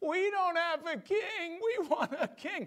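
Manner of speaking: put-on very high, slow, whining Hebrew voice. Retelling what the people whined about, in a mock whiny hebrew voice. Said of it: "let me see if I can do a proper Hebrew voice for this".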